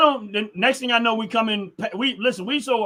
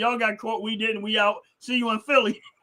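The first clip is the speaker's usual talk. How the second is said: put-on mocking, teasing tone; 4 dB quieter than usual. Retelling teasing a cousin who got pulled over: imitating own mocking taunt. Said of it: "I'm making fun of my cousin".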